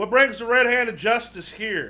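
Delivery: loud bandit's call. Narrating a scene, voicing Rum, a brigand coming up behind you: Rum calling out loudly. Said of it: "kind of calls out fairly loud".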